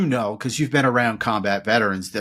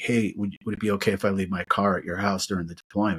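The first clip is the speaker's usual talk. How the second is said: mock-shy, put-on, quieter and lower; 3 semitones lower, 5 dB quieter than usual. Retelling what Gerga asked one day, imitating Gerga's shy request. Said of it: "he's so like shy about it".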